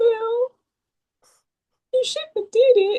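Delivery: mock crying. Acting out turning empathetic toward people pleading with him, mock crying. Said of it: "I start crying like".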